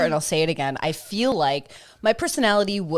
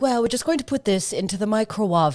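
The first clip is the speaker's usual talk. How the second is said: put-on seductive, purring, sensual delivery in British accent; 3 semitones higher than usual. Retelling a cooking show line: Nigella Lawson impression. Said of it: "that British sensual chef when she was like".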